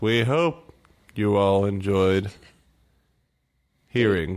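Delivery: put-on slow newscaster voice. Addressing the listeners while trying to sound like a news guy, use a slow Tom Brokaw news voice. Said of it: "Why are you talking so slow?".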